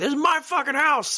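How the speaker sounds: put-on yelling, voice way up very high. Retelling a movie scene of yelling in the middle of the night: imitating someone yelling. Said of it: "he's yelling in the middle of the night".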